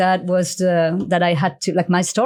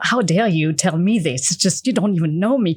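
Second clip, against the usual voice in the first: put-on angry ranting outburst. Retelling pacing at home, talking back to someone: retelling own angry rant. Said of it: "all angry and pissed off".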